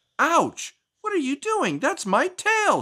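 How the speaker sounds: very high, shrill storybook-style shout. A narrator reads Ms. Hare as the cow tugs her tail, Ms. Hare shouting. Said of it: "being the giving friend that she was, / [name] thought about how she could stay warm like Ms. / allowed the pigs to take the rest of her hair and use it to make thick scarves".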